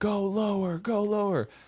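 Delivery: very high, very slow, drawn-out scream. Retelling a head judge walking by during thrusters: imitating someone screaming. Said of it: "starts screaming".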